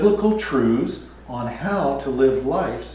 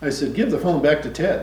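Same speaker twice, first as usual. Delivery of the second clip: plain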